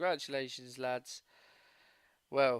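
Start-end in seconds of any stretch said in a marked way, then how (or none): none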